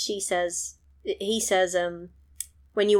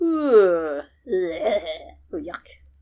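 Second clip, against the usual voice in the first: very slow, drawn-out yak grunts, long "ooh"; 3 dB louder than usual. Pretending to be a yak while recapping a film: yak voice. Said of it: "That was me being a yak".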